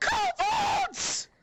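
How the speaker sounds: shrieking yell. A woman sees a dead body on the floor and yells: shrieking yell. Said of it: "she just yells".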